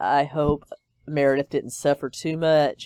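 ordinary talk, nothing marked

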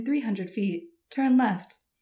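level, even, half-robotic sat-nav voice. Performing a requested line like a navigation assistant: GPS navigation voice. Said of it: "can you say, "Turn left at the next stop"?".

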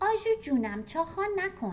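high-pitched voice. Ayeh speaks to Arezoo in a high-pitched voice. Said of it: "با صدای زیر گفت".

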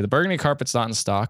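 ordinary talk, nothing marked

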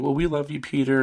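play-acted, weepy, tearful voice speaking through crying. Retelling a movie scene where the mom speaks to her son: imitating a crying mom. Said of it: "the mom's, like, crying".

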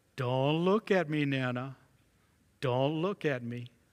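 soft, small, charming little voice. Retelling a granddaughter playing in forbidden mud: imitating a charming little voice. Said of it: "she would say in a charming little voice".

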